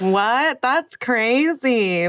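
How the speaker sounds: play-acted dry, sarcastic tone of mock disbelief. Retelling a commenter's reaction to the news: imitating a sarcastic comment. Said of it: "like, in a sarcastic way".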